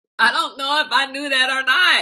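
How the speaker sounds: high voice, words broken up by laughter. Explaining a surprising fact about olives, laughing while talking. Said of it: "That's why I'm laughing".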